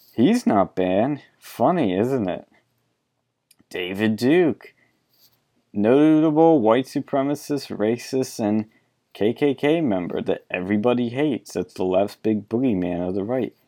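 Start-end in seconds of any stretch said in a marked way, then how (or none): 1.4-2.5 sarcastic, ironic tone. Pointing out an account that is not banned: sarcastic. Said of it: "I say that all sarcastically".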